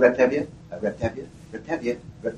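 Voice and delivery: normal talking voice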